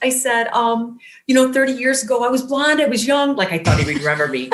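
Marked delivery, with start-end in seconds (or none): 1.5-3.4 high-pitched, sobbing voice. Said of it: "I'm sobbing. I'm shaking".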